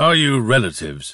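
dull, muffled voice. A professor asks his visitors whether they are relatives, in a dull, muffled voice. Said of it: "His voice sounded dull and muffled".

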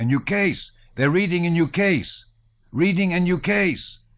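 very high, shrill, loud crowd cries. Voices in a crowd rushing toward the reader cry out: crowd crying out. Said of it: "Cried voices in the crowd".

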